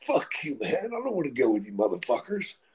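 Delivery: acted angry delivery. Speaker retells answering people who asked them to come along: retelling an angry retort. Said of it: "So I was angry at them".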